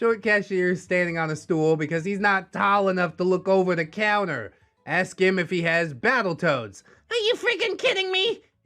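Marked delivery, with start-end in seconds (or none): 7.1-8.4 very high-pitched, tiny gnome-like voice. Retelling a GameStop visit, the speaker quotes the short cashier in a high-pitched gnome voice. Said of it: "In his high-pitched gnome voice".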